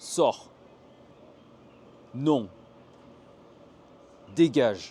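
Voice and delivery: loud, stern, authoritative, commanding voice. Demonstrating the fourth tone's emotion in French, give a very authoritative command. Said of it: "l'émotion très autoritaire".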